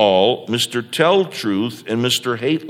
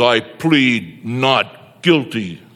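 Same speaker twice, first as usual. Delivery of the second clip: deep, bold voice, very slow and drawn out. Reading a courtroom story, voicing the accused's plea in a deep bold voice. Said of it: "deep and bold".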